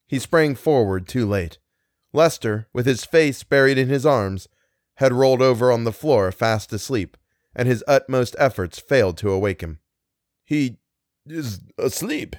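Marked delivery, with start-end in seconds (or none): 10.4-12.3 soft, halting, broken-up stuttering stammer. Unable to wake a man asleep on the floor, he speaks stammering. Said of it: "he stammered".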